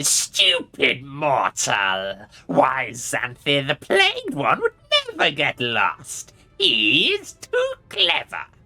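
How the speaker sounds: very slow, triumphant, demonic, scornful gloating. Voicing the Vrock laughing triumphantly at a mortal: Vrock laughing triumphantly. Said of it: "The Vrock laughs triumphantly".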